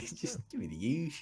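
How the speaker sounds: put-on Australian accent. Discussing a shortened word, the speaker says it in an Australian accent. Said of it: "with my perfect Australian accent".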